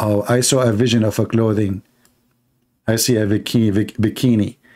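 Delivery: normal talking voice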